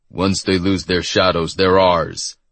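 ordinary delivery, nothing marked

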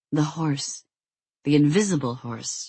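ordinary delivery, nothing marked

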